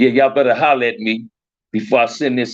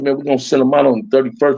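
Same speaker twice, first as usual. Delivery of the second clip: usual speaking voice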